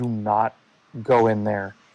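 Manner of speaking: very low, quiet, hushed voice. Playing a D&D character who leans in to say it, quietly. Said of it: "just kind of quietly".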